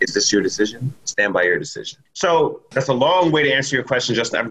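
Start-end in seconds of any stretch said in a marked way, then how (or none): 0.0-2.0 mock very calm, low voice. Recounting how the parents reacted, the speaker imitates their dad's very calm voice. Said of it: "in his very calm voice".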